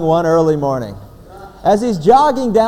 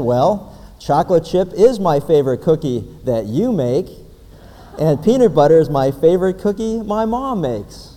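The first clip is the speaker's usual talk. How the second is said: usual speaking voice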